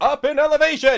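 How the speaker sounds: very high, very loud bellowed shout. Retelling a player's captain calling back to the goblin pilot, shouting back. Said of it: "shouting back".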